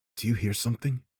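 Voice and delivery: hushed whisper. In a story, a character leans close to the narrator's ear and asks: whispering. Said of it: "Dmitri whispered".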